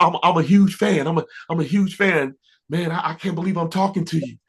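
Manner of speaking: high, rushed, starstruck gushing like an excited fan. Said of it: "I was like".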